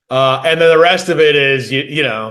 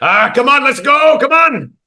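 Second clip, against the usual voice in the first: put-on Irish accent, pitched very high; 10 semitones higher than usual. Retelling a man urging him to fight: imitating a man in an irish accent. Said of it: "I don't remember if he had an Irish accent, and I'm just inserting it".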